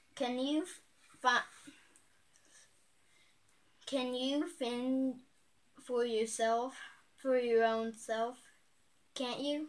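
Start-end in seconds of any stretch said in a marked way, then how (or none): none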